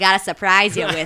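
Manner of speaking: clumsy, terrible put-on Boston accent, loud. Quoting a character making stew: terrible Boston accent. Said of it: "That's my terrible Boston".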